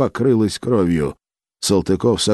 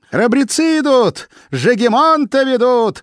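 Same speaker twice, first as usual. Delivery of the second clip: very high, clear, ringing shout; 3 dB louder than usual. Narrator reads Maria Temryukovna shouting at the voivodes, ringing shout. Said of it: "звонко закричала Мария Темрюковна".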